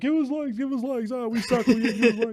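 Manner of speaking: high, pleading, begging little puppet voice. Voicing a little gizmo puppet begging for likes: put-on puppet voice begging for likes. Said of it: "I throw gizmo around begging for likes".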